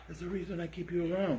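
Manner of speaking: hushed, half-whispered, barely audible aside. Praising the other speaker's idea of adding categories: half-whispering. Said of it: "You're whispering it".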